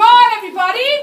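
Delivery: very loud, full-voice shouting at the top of the lungs. Showing a standing classroom the line to shout, shouting at top of voice. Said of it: "shout on the top of your voice".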